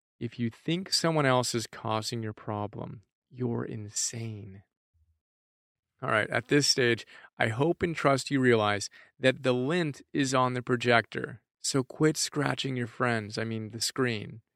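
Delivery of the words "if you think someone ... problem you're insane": confiding, hushed, voiceless half-whisper. Leaning in to tell the audience a secret, the speaker says it in a half-whisper. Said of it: "in my best whisper voice".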